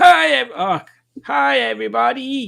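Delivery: put-on cheerful cartoon doctor voice. Greeting the quiz players in the style of Doctor Nick.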